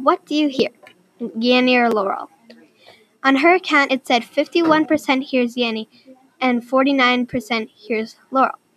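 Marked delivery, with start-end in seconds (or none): none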